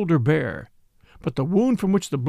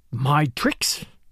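hissed, hissing voice. A pale rival throws back an accusation of tricks, hissed. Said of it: "hissed his pale rival".

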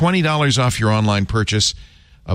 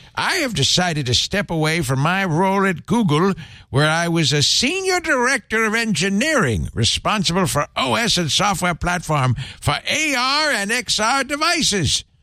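put-on very high, slow, cantankerous old-man voice; 9 semitones higher than usual. Reading someone's announcement aloud, cranky old man voice. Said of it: "I'm going to do him in a cranky old man voice".

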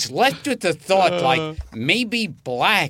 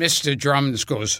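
normal talking voice

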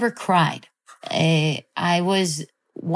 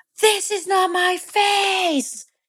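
play-acted, very high, shrill, intense, all-out yelling; 13 semitones higher than usual. Retelling a fight with their mom, acting out own intense yelling. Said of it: "I'm just yelling so intensely at my mom".

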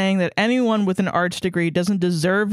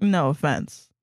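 put-on smug tone, lower; 4 semitones lower than usual. Retelling what an ex-roommate said about looking down on art students, mock-smug. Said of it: "followed by smugly saying".

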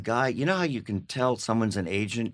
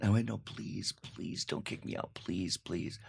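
acted, breathy, repeated whispered pleading; 8 dB quieter than usual. Retelling begging a teacher not to kick him out: retelling his own pleading. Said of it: "I went".

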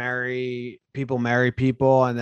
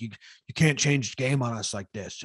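acted-out, mock pleading tone; 4 dB quieter than usual. Imagining how he will sound in the bargaining stage: mock pleading. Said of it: "like pleading".

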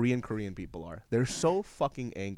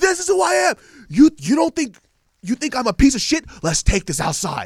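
put-on very loud, very high old man scream; 13 semitones higher, 10 dB louder than usual. Retelling a video of an old man in a bar: imitating an old man screaming. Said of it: "that's what he's screaming".

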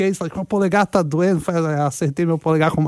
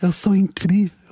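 whispering; 3 semitones higher than usual. Answering a listener's request to say a phrase in Portuguese: whisper. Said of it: "She wants you to whisper it".

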